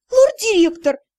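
indignant exclamation. The narrator protests to the teasing, smiling lord-director, indignant exclamation. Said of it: "возмутилась я".

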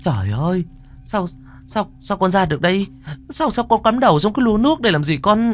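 very high, trembling, flustered quavering voice. Narrator reads an old woman's alarmed questions to na, in a flustered, trembling voice. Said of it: "cuống quýt giọng run run".

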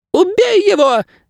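frenzied, crazed, very high shrieking bird voice. Narrator reading a story gives a bird's line in a shrieking crazed bird voice. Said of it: "верещала птица безумным голосом".

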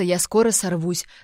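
plain

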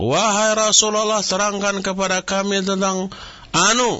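high-pitched, loud shouting.

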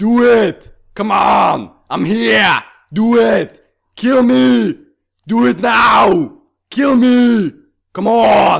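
very high, very slow, loud, drawn-out, taunting yell. Asked for their best Arnold, the speaker does a shouted Arnold Schwarzenegger impression. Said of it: "Ge mig din bästa Arnold".

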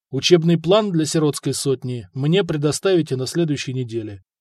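ordinary delivery

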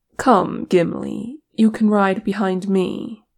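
plain

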